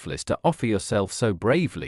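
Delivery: plain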